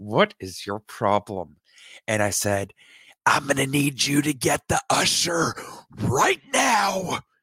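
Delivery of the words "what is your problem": imitated speech through gritted teeth, annoyed. Retelling a companion's annoyed question during a panic attack, through gritted teeth. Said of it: "through gritted teeth".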